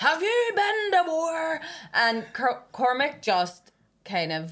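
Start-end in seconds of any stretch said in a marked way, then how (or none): 0.0-1.6 put-on angry outburst in a man's voice, higher. Retelling a man at a bar confronting a comedian: imitating a triggered man. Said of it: "he stood up and he was going".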